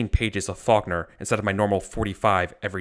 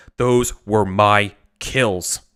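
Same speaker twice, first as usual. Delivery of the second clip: angry voice, very slow and drawn out; 4 dB louder than usual. Voicing the major who claims the kills, angry. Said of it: "he's gonna angrily say".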